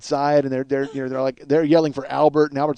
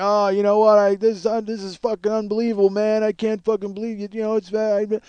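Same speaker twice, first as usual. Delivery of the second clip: high, incoherent, babbling half-moan; 6 semitones higher than usual. Retelling a man on a stretcher: imitating someone yelling incoherently. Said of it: "he's just yelling incoherently, kinda just babbling".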